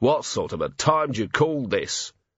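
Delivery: ordinary delivery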